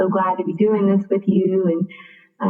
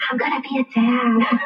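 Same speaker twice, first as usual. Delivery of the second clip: put-on whisper, higher; 5 semitones higher than usual. Retelling how her partner announced the news: imitating someone whispering. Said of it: "I could hear him whispering".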